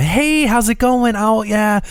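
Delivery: easygoing, relaxed, high-pitched, slow casual voice. Showing the different phone voices people have: relaxed phone voice. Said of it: "a nice relax".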